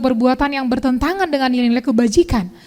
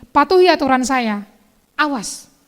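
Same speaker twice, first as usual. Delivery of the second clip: ordinary delivery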